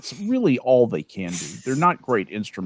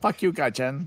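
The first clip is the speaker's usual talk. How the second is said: mock Japanese accent, higher pitch; 5 semitones higher than usual. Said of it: "I hear that in a Japanese accent".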